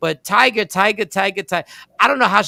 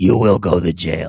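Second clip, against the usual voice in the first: brooding superhero voice, much lower pitch; 13 semitones lower than usual. Joking with others in conversation, switching into a Batman voice. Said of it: "In my Batman voice".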